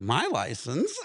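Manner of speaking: imitated confused tone. Retelling being asked for a license by a cop: retelling own confused question. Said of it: "all confused at this fucking point".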